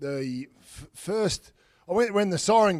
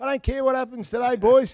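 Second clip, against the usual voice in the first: squeaky, very high-pitched coach voice; 9 semitones higher, 3 dB louder than usual. Recalling an old coach's words to the team, in Lee Matthews' squeaky voice. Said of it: "That's pretty good".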